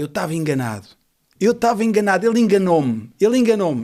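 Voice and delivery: loud, high, frantic, panic-stricken outcry. Retelling a dying man's last words, imitating a panicked scream. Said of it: "de pânico e começou a gritar".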